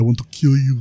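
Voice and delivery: put-on Austrian accent. Retelling Arnold's imagined reply to the impression: Arnold Schwarzenegger impression. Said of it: "I would do the impression".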